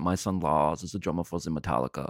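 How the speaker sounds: low-pitched Copenhagen Danish accent. Speaker doing a run of accents moves on to Denmark, in Copenhagen accent. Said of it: "This is my Copenhagen accent".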